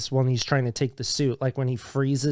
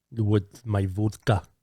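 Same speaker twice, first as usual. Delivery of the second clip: put-on Russian accent, deep, much lower pitch; 4 semitones lower than usual. Imitating how an actor talks in a brief role, deep russian accent. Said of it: "that's like super deep".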